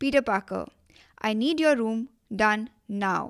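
put-on firm, unyielding tone. Showing how they call Peter Parker by his full name, putting on a firm tone. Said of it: "in a firm tone".

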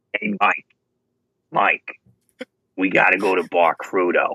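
put-on New York Staten Island accent. The speaker quotes Cody talking to Mike, doing a Cody impression. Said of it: "75-year-old woman from Staten Island who's been smoking".

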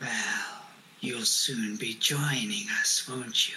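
very low, deep, deathly undead creature voice. Narrating a game, the speaker has the Revenant lean over Shara and speak in the Revenant's voice. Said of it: "The Revenant looks at you and says, / you see a rather tallish man step around. He's wearing fairly glossy clothing, although it's a bit rumpled and old and dirty. His pallor is very off. He looks whi".

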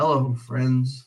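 acted sports commentator voice. Arguing a sportscaster sounds better with music behind him: imitating Jim Nantz. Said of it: "Jim Nantz on his own just being like".

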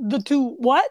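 loud, put-on Brooklyn accent. Actor reading a scene where Mr. Tipton is questioned, in a Brooklyn accent. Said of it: "I did it with a Brooklyn accent".

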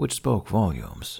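ordinary delivery

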